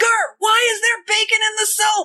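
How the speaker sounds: very high, shrill, screeching yell. Retelling a funny scene to friends: imitating someone screaming. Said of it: "and he screams".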